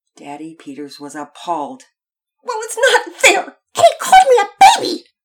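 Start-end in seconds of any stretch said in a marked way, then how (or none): 2.4-5.0 ear-splitting, shrill, very high, very loud screech. A girl protests to her appalled father: screeching. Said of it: "she screeched".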